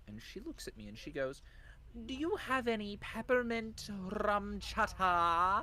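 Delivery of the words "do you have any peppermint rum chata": put-on high, slow English accent with chata stretched. Retelling a liquor store customer's question, mimicking her English-sounding accent. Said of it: "I am not doing a bad English accent. I am mimicking what this woman sounded like".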